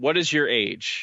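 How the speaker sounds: play-acted alien voice, understated, mild hint of bigness. Retelling an encounter on a craft, imitating a loud booming voice. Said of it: "the loud booming voice says".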